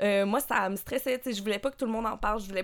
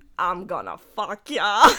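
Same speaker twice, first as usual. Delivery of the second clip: put-on Australian accent, done for show; 3 semitones lower, 4 dB louder than usual. Retelling what a guy said, quoting him in an Australian accent. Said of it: "avec un accent australien".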